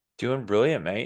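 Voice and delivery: light put-on English accent. Asked how he is doing, the speaker answers in a put-on English accent. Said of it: "get my little English accent back".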